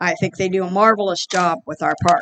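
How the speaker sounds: ordinary talk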